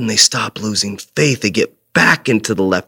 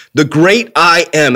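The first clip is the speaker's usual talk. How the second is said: confident, assured, slow, deliberate, raised voice; 5 semitones higher, 5 dB louder than usual. Retelling Moses answering the slaves: imitating Moses saying it confidently. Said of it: "I can picture him saying it with confidence".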